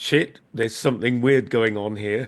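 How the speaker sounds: ordinary delivery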